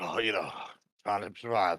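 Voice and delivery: rough-sounding voice. Answering how the day is going after a wild night: rough-sounding voice. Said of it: "you sound rough".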